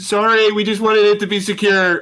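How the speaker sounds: shouting. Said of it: "I'm gonna scream from behind the door".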